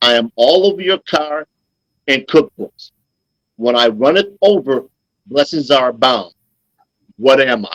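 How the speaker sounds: slow, careful, deliberate reading aloud. Host reading a riddle aloud to listeners, reading the riddle slowly. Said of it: "I'll read it slowly".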